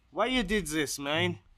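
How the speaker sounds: put-on Ukrainian accent. Imitating how a friend from Ukraine talks: imitating a friend's Ukrainian accent. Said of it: "he talks like that".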